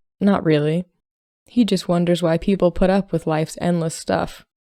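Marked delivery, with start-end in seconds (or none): none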